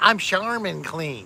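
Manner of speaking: cartoon bear mascot character voice. Chatting about toilet paper, the speaker does the Charmin bear voice. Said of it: "You recognize that voice?".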